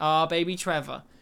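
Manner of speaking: ordinary talk, nothing marked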